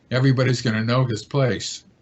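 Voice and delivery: ordinary talk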